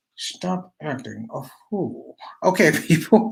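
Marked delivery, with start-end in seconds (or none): 0.2-2.2 very quiet, slow scolding through clenched teeth. Retelling how a woman scolded someone who did wrong, imitating her through clenched teeth. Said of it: "she would say it like through her teeth".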